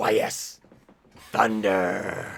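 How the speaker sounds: low, raspy, smoke-worn chain-smoker voice. Recalling a character's voice while looking for a clip, Arl chain-smoker voice. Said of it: "She sounded like a like a, like a chain smoker".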